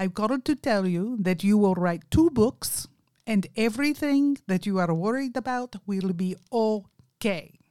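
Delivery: put-on strong Indian accent. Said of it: "he has a very strong Indian accent".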